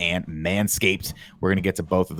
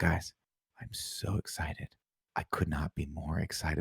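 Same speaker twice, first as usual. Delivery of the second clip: slow, flat, dull, put-on doped-up monotone; 11 dB quieter than usual. Mocking a man in a video's excitement: imitating a sedated-sounding voice. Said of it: "you say it in a voice where it, it, you, you feel like the Quaaludes just kicked in".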